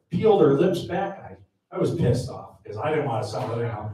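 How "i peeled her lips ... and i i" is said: ordinary delivery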